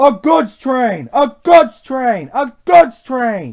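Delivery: very loud, high, cross, repeated grumbling. An engine hauling dirty coal trucks instead of coaches, grumbling. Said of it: "he grumbled".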